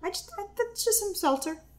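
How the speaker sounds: fibbing tone. Giving the other person a drink she made to sip, lying voice. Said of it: "Why are you using your lying voice?".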